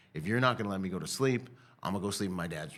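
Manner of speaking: ordinary delivery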